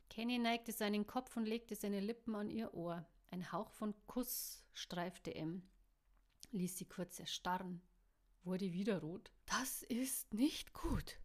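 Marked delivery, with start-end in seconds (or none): 9.4-11.1 very slow, high whisper. M. whispers to Kenny after he brushes her ear with a kiss: whispered. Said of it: "flüsterte sie ihm zu".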